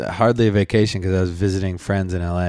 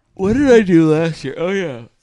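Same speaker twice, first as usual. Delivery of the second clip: words spoken through a very high-pitched yawn; 9 semitones higher, 4 dB louder than usual. A speaker recalling what they did last year talks while yawning. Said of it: "Sorry, yawning".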